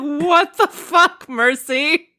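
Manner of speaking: angry, drawn-out outburst. Retelling how Adam reacts after saving a toddler: imitating Adam angry. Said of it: "And he's like".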